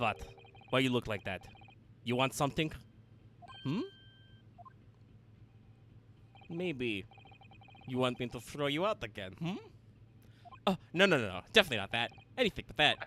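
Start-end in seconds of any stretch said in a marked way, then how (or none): 0.0-9.6 put-on angry, irate Russian accent with broken English. Voicing Stroganov with angry Russian noises. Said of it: "angry Russian noises".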